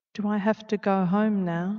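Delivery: small voice. Reading the girl's question to Anna, who holds her at her mercy; tiny voice. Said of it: "Charlie's voice was tiny".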